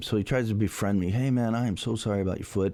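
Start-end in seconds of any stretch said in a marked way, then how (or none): 1.1-2.7 mock, imitated apologetic tone. Retelling how a bully apologized: imitating an apologetic tone. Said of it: "very apologetic".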